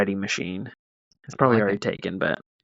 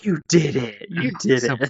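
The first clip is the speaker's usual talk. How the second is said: mock doting parent voice, higher; 3 semitones higher than usual. Joining in the retold parent bit, imitating a parent praising a kid. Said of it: "I was the parent, just like".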